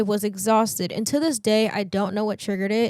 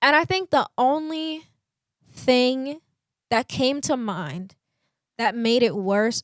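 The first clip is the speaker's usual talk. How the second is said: voice breaking and catching mid-phrase; 3 semitones higher than usual. Recounting a touchy personal topic, the speaker talks with voice cracking. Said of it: "sorry if my voice is cracking".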